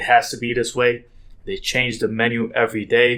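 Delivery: normal talking voice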